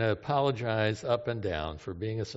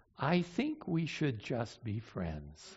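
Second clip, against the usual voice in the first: sugary, gentle, soft and sweet voice; 8 dB quieter than usual. Telling guys what a girlfriend said while holding their arm, in a mock-sweet voice. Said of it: "saying in a sweet voice".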